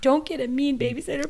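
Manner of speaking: mock tearful child voice, high, sobbing. Retelling a child's plea to the parent, imitating a sobbing child. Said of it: "Leo was sobbing".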